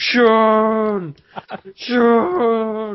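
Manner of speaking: constant very high, loud, glitched screaming.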